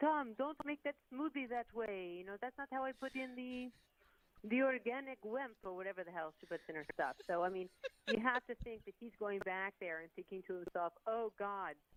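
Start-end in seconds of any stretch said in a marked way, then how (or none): 0.0-5.5 put-on Brazilian accent, pitched up. Imagining what a wife would say to her husband, attempted brazilian accent. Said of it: "if only I could do a Brazilian accent".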